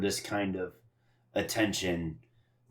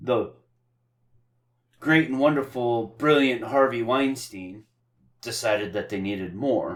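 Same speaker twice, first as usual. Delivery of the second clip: raised, over-the-top, dripping sarcastic admiration; 3 semitones higher, 4 dB louder than usual. Describing the studio adding an ending to the movie: sarcastic praise. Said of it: "if you missed the sarcasm, I'm prefacing it now".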